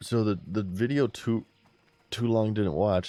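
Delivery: words broken up by hiccuping. A streamer recapping a video for viewers, hiccuping. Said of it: "Sorry, I'm hiccuping".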